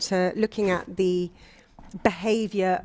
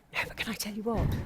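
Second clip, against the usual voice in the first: secret, confiding, hushed secretive voice; 3 semitones higher, 7 dB quieter than usual. Telling the other speakers something, in a secret voice. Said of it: "She's telling us in a secret voice".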